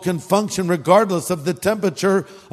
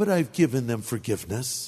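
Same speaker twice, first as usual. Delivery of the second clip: mock-smug tone, lower and quieter; 6 semitones lower, 8 dB quieter than usual. Speaker retelling what a woman said to her friend, retelling a smug remark. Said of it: "very smugly".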